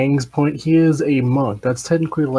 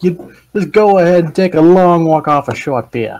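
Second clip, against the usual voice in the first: high, loud, mock Chicago gangster accent. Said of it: "That's like a Chicago, like, gangster voice".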